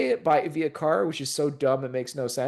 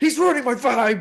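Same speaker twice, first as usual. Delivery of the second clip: put-on scream, higher pitch; 8 semitones higher, 3 dB louder than usual. Retelling what Bozo says about a sit-up count: imitating Bozo screaming.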